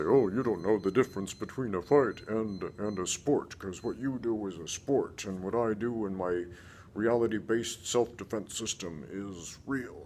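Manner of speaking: acted-out sarcastic, snide, snarky tone. Channel host quoting a first-time viewer's comment, mock-snarky commenter tone. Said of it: "And in a snarky tone".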